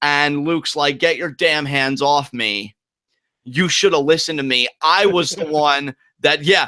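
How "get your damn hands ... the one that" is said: ordinary delivery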